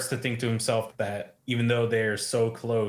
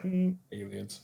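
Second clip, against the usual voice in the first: bone-dry, with no excitement at all; 4 dB quieter than usual. Retelling a character's answer about his favorite occult topic: imitating a dry answer. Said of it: "he very dryly".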